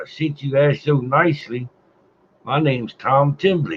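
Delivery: put-on light touch of a vaguely Irish accent. Voicing a stranger who answers a bleeding man's plea: vaguely irish accent. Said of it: "he said with a vaguely Irish accent".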